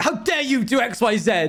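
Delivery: irritated, snapping tone. Retelling a roleplay moment when snapping at Abolish: retelling snapping angrily. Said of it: "I like kind of like snap at him".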